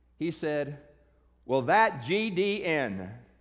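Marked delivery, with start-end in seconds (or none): 1.5-3.1 loud, swaggering, braggadocious show-off boasting. Retelling what a man said to another man at a table, imitating a loud bragging voice. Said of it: "in this very loud, braggadocious voice".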